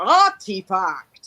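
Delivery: put-on artifact pronounced in a British accent. Retelling how Patrick Stewart says a word: Patrick Stewart impression. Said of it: "Patrick Stewart say".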